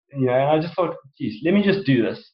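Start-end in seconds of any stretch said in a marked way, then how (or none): none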